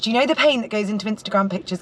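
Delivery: ordinary talk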